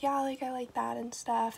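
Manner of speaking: very quiet, flat, sleepy, tired monotone. Retelling chatting with friends late at night: imitating tired quiet talking. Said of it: "talking like this because we were so tired".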